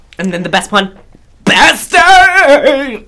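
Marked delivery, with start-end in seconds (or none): 1.5-2.9 shrill, pitched-up scream. Showing off his Linda Day George impression with her best line, imitating her scream. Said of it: "I will scream".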